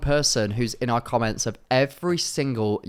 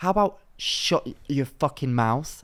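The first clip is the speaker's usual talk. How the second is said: openly hostile, aggressive tone. Reacting to people who say a phrase unironically: aggressive. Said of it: "I'm feeling quite aggressive today".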